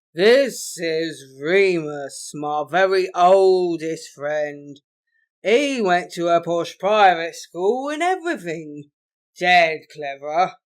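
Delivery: put-on very loud, slow, slurring drunken voice. Reading fiction aloud, a character introducing an old friend to a group: slurring loudly. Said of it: "Grant slurred loudly".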